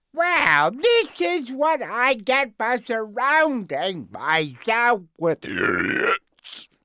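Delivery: very high, loud, swooping voice. Recording the first take of the role, in Krang voice. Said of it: "Okay, Krang, take one".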